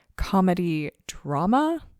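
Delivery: drama said with rising, question-like intonation. Host introducing a new Netflix series on her show: question-like rise on comedy drama. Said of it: "I say comedy drama with a bit of a question mark inflection there".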